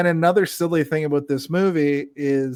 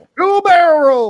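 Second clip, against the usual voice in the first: shrill, booming, very loud, high, drawn-out yell; 13 semitones higher, 9 dB louder than usual. Player quoting Star Fox while friends try a flight simulator, yelling a quoted game line. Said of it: "yell the same line I yelled".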